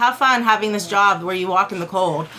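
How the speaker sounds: normal talking voice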